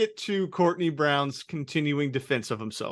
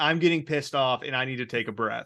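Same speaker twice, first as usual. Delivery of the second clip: ordinary delivery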